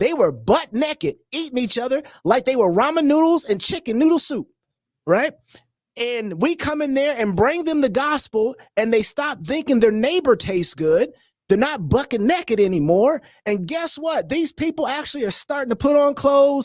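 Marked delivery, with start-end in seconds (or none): 11.5-16.7 rural country accent gradually creeping in. Telling how a people changed after hearing the gospel, slipping into a country accent. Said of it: "Why am I getting a country accent?".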